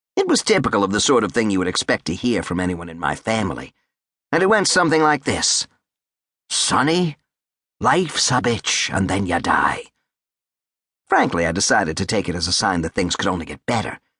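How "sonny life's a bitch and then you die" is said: heavy Irish brogue, slow, laid on thick. Quoting the mother's bit of family wisdom, in a thick Irish brogue. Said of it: "in her thick Gaelic brogue".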